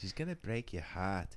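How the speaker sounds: soft attempted Australian accent slipping toward Irish accent. Showing how Eugene O'Brien says it, imitating Eugene O'Brien's Australian accent. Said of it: "That sounds she- that Irish".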